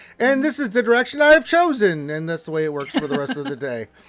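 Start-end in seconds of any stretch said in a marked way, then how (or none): 0.2-2.1 put-on self-assured leader voice, higher and louder. Acting out a character who believes she is leading the group: Critty voice. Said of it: "She's like".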